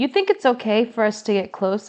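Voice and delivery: plain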